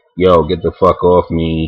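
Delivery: plain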